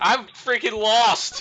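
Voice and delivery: high, loud, slow exasperated yell.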